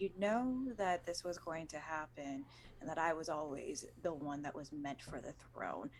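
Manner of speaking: hushed, quiet half-whisper spoken close. Grabbing an enemy in a game scene and speaking into her ear: half-whispering. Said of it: "I whisper in her ear".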